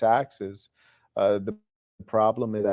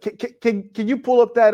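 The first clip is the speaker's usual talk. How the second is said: put-on stammering voice, higher and louder; 14 semitones higher, 9 dB louder than usual. Imitating PBD asking someone to pull something up: imitating PBD's stammering request. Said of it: "he like".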